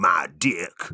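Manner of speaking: fake American stand-up comic accent. Speaker mocks a crude stand-up line, saying it in a put-on American accent. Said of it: "I put on an American accent".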